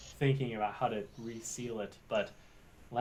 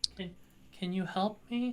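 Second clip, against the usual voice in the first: put-on small, high little-girl voice; 8 semitones higher than usual. Voicing a creature calling out to the players: young girl's voice. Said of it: "all of you hear in a young girl's voice".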